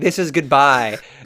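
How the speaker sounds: mock heavy theatrical, very dramatic delivery. Retelling a book character's farewell line: imitating Rhysand saying it dramatically. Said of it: "very dramatically says".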